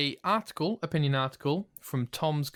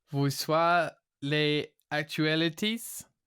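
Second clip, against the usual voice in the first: attempted French accent. Attempting the news intro in French: attempted French accent. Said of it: "this is not my best accent".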